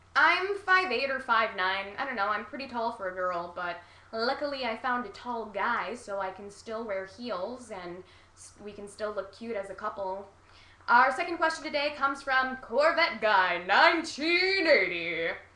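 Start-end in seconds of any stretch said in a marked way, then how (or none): 10.8-15.3 announcer-style game show voice. Speaker introducing the second question from a username, in a game show host voice. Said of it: "That's my game show voice".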